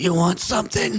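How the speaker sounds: husky character voice. Voicing a lady questioned outside a mansion: husky voice. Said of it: "That husky voice!".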